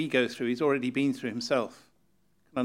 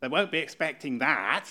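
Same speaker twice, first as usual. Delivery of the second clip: New Zealand accent. Speaker quoting a reaction, in a New Zealand accent. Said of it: "you almost have to do this in a New Zealand accent".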